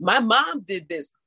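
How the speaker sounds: plain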